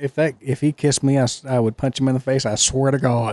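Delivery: ordinary delivery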